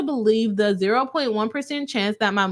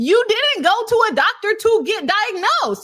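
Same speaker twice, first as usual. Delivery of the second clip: shrill yelling, voice pitched very high; 11 semitones higher, 4 dB louder than usual. Speaker telling y'all about a court's ruling, already yelling. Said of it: "I'm already yelling".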